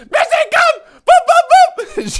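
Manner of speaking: very high-pitched, very loud, drawn-out, shrill shouting. Imitating how a grandmother would call the family cat from the doorway, for the whole neighbourhood to hear, in a retold loud yell. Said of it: "She would just yell the cat's name".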